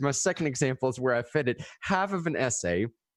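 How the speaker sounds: ordinary delivery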